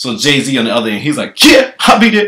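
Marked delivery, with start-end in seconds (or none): 1.4-2.3 shrill, very high-pitched, loud raised character voice. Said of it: "That's my [name] impersonation".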